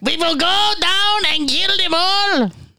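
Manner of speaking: very high, slow, drawn-out fake German accent. Answering a request to say something in a german accent: put-on german accent. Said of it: "Say something in your best German accent".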